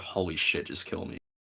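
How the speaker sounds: mock, utterly unenthusiastic, flat whispered monotone. Retelling a movie scene, quoting a character's reply in a mock-unenthusiastic tone. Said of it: "in the most unenthusiastic tone".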